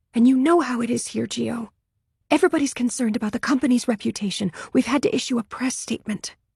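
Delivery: barely above a whisper. Reading a novel, an assistant explaining the company's concern: barely above a whisper. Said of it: "Her voice is barely above a whisper".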